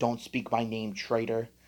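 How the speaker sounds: ordinary delivery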